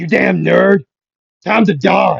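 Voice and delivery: raw, rough, very loud scream. Retelling a fan fight scene, voicing Bakugo: screaming as Bakugo. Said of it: "you could hear Bakugo screaming".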